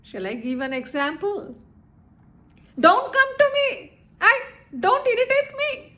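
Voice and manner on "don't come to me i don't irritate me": pitch rising upward on "me". Giving an example of voice modulation: rising intonation. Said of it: "This is called the rising intonation".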